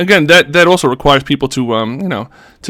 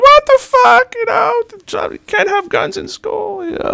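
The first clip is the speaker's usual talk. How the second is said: put-on very high, squeaky, swooping little girl voice. Mocking people who get offended, in a high-pitched little girl voice. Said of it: "a little high-pitched voice like a little girl".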